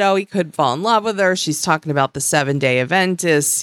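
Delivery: ordinary delivery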